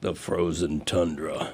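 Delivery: fake, very deep voice dropped way down. A speaker narrates a short line in his own impression: John Facenda voice. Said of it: "That was my John Facenda voice".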